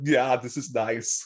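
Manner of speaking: put-on German accent. Suggesting how someone should talk at the beach, in a German accent. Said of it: "You should speak with a German accent too".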